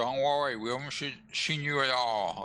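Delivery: words garbled by a full mouth. Speaking in character to a host after eating: talking with mouth full. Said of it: "Kai says, uh, with his mouth full".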